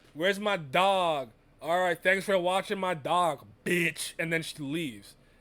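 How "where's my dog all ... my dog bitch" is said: mock drunken speech. Retelling a scene where a character is drunk: imitating drunk Supergirl. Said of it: "She's fucking drunk and smashed".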